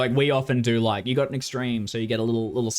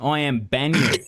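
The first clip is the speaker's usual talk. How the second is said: put-on thick, heavy Australian accent, higher; 4 semitones higher, 3 dB louder than usual. Voicing a monk character in a game: heavy Australian accent. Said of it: "we'll do heavy Australian then".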